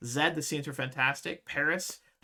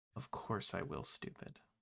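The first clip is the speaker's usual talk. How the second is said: kindest, sweetest, most loving whisper; 7 semitones lower, 13 dB quieter than usual. Retelling how he gets down and answers, in a mock-sweet loving voice. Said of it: "in the sweetest, kindest, most loving voice".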